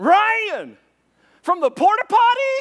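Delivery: shrill, very loud, swooping yell. Retelling a man on the beach calling out to the boat: imitating John yelling out. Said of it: "And he yells out".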